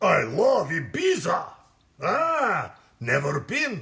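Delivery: loud, booming, animated character voice with swinging pitch. Answering another speaker's request to say the line: Heavy voice. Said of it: "can you say "I love Ibiza" with Heavy's voice?".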